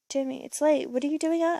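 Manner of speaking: ordinary delivery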